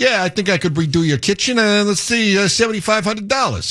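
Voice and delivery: put-on New York accent. Comparing rising project costs to a bad remodeling contractor, imitating a new york contractor. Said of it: "this is my New York Shyster contractor".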